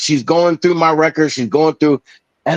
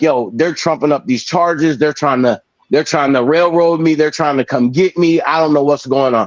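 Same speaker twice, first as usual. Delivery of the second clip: ordinary delivery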